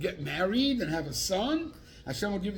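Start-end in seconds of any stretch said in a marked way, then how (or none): none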